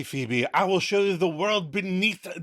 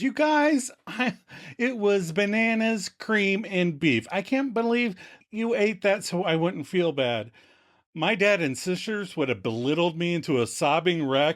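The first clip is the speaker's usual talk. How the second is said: plain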